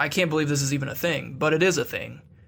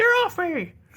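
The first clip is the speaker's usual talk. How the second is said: very high, loud yelling gnome voice. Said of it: "slamming buttons and yelling".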